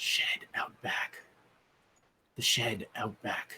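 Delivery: mumbled under the breath. Game player voicing his character speaking to the team, muttered under his breath. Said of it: "like under his breath".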